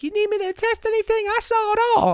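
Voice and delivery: very high, put-on female voice. Retelling what a woman driving by said after the accident: imitating a woman's voice. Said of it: "What voice was that?".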